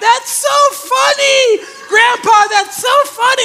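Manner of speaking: put-on child's high, loud screaming with delighted laughter.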